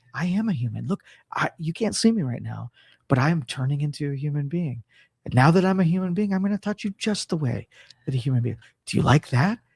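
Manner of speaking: gentle, calm, soothing tone. Role-playing a robot turning human for the other speaker: calming voice. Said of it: "in my calming voice".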